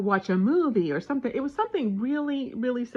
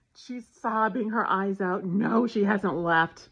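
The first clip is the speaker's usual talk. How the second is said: normal talking voice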